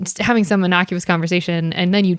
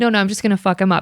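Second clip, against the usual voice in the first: unbothered, matter-of-fact, calm, even-keeled tone. Retelling a security guard's words to a coworker during a fight: imitating saying it quietly. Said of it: "you said it so quietly".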